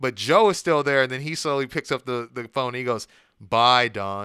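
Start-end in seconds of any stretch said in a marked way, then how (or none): 3.4-4.2 mocking tone, much lower and louder. Retelling how a man said goodbye on the phone before being locked up, retelling a mocking goodbye. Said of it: "like very mockingly".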